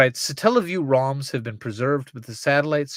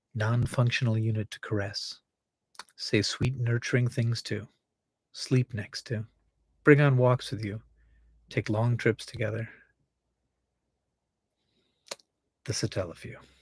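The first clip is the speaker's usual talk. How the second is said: ASMR-style voice, much quieter; 3 semitones lower, 6 dB quieter than usual. Speaker reads someone's fan fiction aloud in an ASMR voice. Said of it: "I'm gonna read it in an in an A S M R voice".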